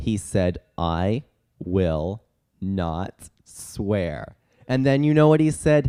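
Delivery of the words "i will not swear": very slow, low, dragged-out speech. Retelling what a talking bird said when let out, speaking very slowly. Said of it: "he started speaking very slowly".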